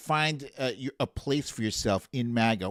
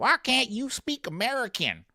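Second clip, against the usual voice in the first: mocking voice, pitched higher; 10 semitones higher than usual. Retelling what Karens say in parking lots: imitating a Karen. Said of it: "you got the Karens coming up to them".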